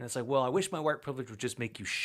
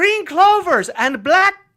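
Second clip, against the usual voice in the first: booming, shrill, high put-on Irish brogue; 17 dB louder than usual. Making up an ad, the speaker uses a cereal-box Irish accent. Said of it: "you have to use that accent".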